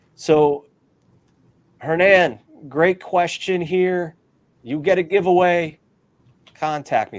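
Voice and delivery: loud, near-yelling voice. The host tells a viewer they won a giveaway, possibly yelling. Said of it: "I'm probably yelling".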